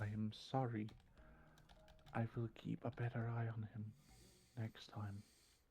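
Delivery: whispered voice. In a tabletop game, a voice all the players can hear: whispering. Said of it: "you all hear a whisper".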